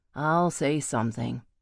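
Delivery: ordinary delivery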